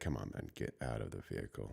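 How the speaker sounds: hushed, soft pleading voice. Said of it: "So the cop is already mad. He's angry".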